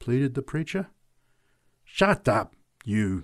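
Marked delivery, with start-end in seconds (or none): 1.8-3.2 growled, growling delivery. Narrator voices a big woman rounding on a drunk man, growling. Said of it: "growled the big woman".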